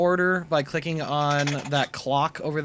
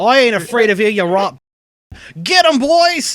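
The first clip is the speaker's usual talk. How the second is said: put-on Australian accent, higher and louder; 7 semitones higher, 12 dB louder than usual. Voicing a frightened halfling stepping back: Australian accent. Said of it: "right, Australian".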